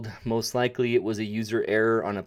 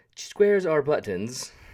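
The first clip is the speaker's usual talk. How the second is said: fake, put-on, slight British accent; 3 semitones higher than usual. Listing favorite features one by one in a video, fake slightly British accent. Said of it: "I put in a fake, slightly British accent".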